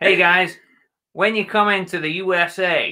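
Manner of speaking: attempted American accent. Taking a turn at doing accents, American accent. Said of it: "American accent".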